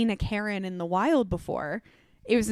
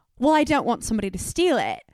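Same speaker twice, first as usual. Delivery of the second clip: put-on Australian woman's accent, swooping pitch. Retelling what an australian woman told a shop owner: imitating an australian accent. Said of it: "I'm not gonna continue to do the accent".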